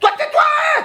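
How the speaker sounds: put-on high, shrill, drunken-sounding shout.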